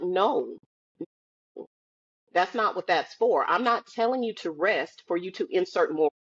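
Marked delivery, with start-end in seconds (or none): none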